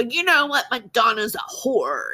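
rough, gravel-throated, gravelly voice. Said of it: "had this really gravelly voice".

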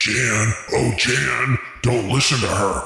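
low demonic voice. Recapping a tv episode, voicing a character's inner voice in a demon voice. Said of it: "inner voice now sounding like a demon".

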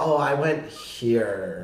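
put-on falling tone at sentence ends. Describing an off-putting way some people talk, imitating a dropped sentence-end tone. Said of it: "drop your tone at the end of every sentence".

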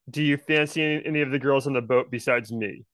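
ordinary delivery

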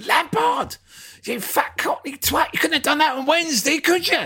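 put-on, very high, frustrated, furious yelling. Retelling jumping up and down at the television: retelling yelling at the TV. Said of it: "I jumped up and down the front of my telly going".

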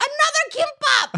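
loud yelling, projected far.

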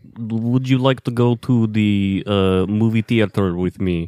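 put-on Russian accent. Asked by a friend to do their best russian accent, speaking in a russian accent. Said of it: "Give us your best Russian accent".

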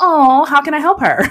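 condescending pity. Imitating how someone might talk about her struggling: imitating a pitying tone. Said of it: "That's just not the tone".

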